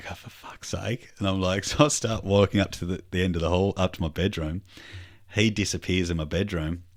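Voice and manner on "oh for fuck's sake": soft, slow muttering. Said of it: "I'm muttering".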